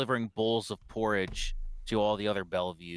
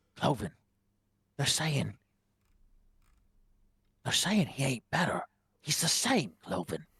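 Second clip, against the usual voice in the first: secretive, pitched-up stage whisper; 4 semitones higher than usual. Otto looks at Cloven and speaks to him in a hushed whisper. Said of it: "whispers in a hushed voice".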